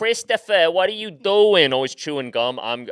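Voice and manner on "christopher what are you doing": put-on New York Long Island accent. Imitating a woman calling to Christopher, in a Long Island accent.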